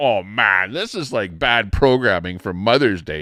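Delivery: ordinary talk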